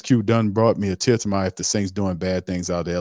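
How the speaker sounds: plain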